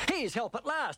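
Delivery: sudden cry full of hope. Narrator reading young Robert's line as he hears horses' feet, crying out. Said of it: "young Robert cried".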